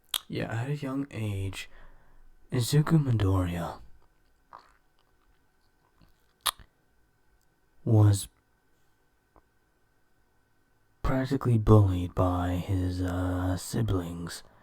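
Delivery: speaking in a whisper. Explaining a story plot while others in the household sleep: whispering. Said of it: "whispering is because everyone in my household right now is sleeping".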